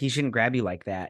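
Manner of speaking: plain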